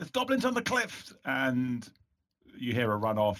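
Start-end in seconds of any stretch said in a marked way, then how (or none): 0.0-1.1 very high, loud shouting. Describing a character spotting goblins in a game: shouting a warning. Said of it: "you heard Amalfrida shout".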